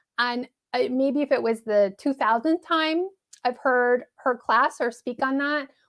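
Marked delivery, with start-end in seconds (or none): none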